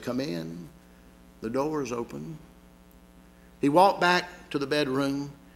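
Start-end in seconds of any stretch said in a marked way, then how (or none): 0.0-2.4 small, weak, feeble, frail, creaky voice. Telling a story; a voice answers the doctor's knock, in a small frail voice. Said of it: "he heard a small, frail voice say".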